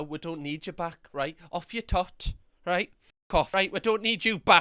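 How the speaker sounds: sassy, cheeky, dismissive brush-off tone. Reacting to a video of someone who disliked beans on toast: being sassy. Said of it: "I'm being sassy right now".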